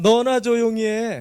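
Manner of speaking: loud, slow, drawn-out yell.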